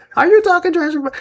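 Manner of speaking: very high, small, tiny voice. Retelling a funny moment on camera, the speaker imitates a woman's little voice. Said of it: "just hearing her little voice".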